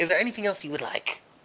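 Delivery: hissed put-on voice. Voicing a character in a role-play scene, asking what else is wanted, hissing voice. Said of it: "hissing voice".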